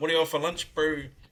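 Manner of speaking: Kiwi accent. Speaker performs a quick example line in a Kiwi accent. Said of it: "Kiwi accent".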